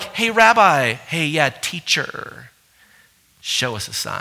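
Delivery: soft, sing-song, mocking, taunting sarcasm. Acting out people demanding a sign from a rabbi: mock-sarcastic tone. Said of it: "This is all sarcasm. I mean, it's a little bit like".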